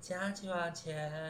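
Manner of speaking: faint, drawn-out, high little kitten voice. Retelling how a quiet coworker greeted customers: imitating a small cat-like voice. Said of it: "她是这样".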